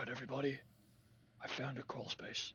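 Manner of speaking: hushed whisper. Telling everybody about a crawl space they found, whispering. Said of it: "Why are we whispering?".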